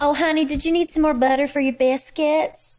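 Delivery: sweet waitress voice, laid on thick, pitched high. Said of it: "cousin to the waitress voice".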